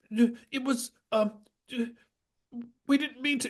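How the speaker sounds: very high, exaggerated, badly acted fake sobbing. Describing bad acting in a scene, the speaker imitates a man's bad crying. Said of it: "like bad man crying".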